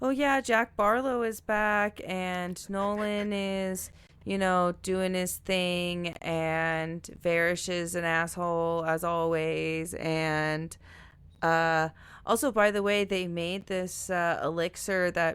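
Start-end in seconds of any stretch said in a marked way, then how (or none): none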